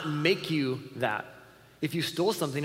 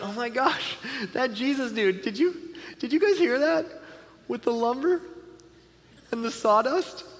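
acted-out amused, delighted, gushing chatter, pitched up; 9 semitones higher than usual. Imitating the original audience reacting to a funny teaching: imitating amused listeners. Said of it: "Jesus' audience would have thought this is hilarious".

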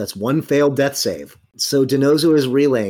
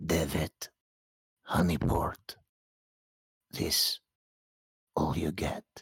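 hoarse, croaky, very quiet, barely-there whisper; 9 semitones lower, 14 dB quieter than usual. Game master voicing a figure the player hears during the scene, croaky whisper. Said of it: "you hear this croaky whisper".

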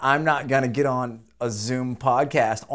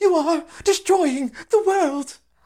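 very high, accusing voice; 4 dB louder than usual. Imitating the Swedish teenage environmentalist: Greta impression. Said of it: "the Swedish li-, girl".

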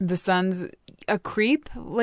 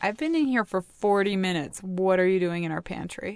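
ordinary talk, nothing marked

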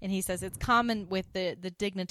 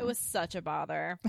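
normal talking voice

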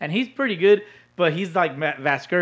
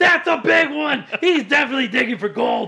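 hyped, high-pitched announcer voice, higher and louder; 10 semitones higher, 4 dB louder than usual. Imitating an announcer reacting to a player picking his nose: hyped, high-pitched Vasgersian voice. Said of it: "he gets hyped and he gets".

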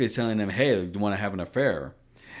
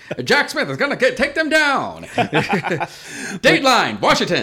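put-on high, loud, swooping old-timey radio announcer voice; 12 semitones higher, 7 dB louder than usual. Talking about Jack Smith with a friend, in an old-timey radio serial voice. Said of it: "old timey radio, serial radio voice".

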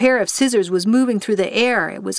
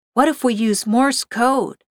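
usual speaking voice

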